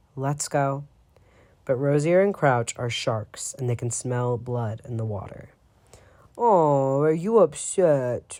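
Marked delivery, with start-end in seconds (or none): 6.3-8.4 mocking baby voice, high, slow, drawn out. Narrator reading Rosier's taunt in a tense standoff: Rosier's mocking baby voice. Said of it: "Rosier says in a baby voice".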